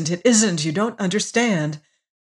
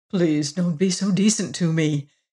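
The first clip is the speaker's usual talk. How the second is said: earnest, entreating, pleading voice; 2 semitones lower than usual. A man pleads with a sobbing woman, entreating. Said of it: "entreated T.A".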